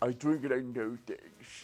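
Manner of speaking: low, soft, put-on English accent. Repeating someone's catchphrase to a co-host, English accent. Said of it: "acento inglés".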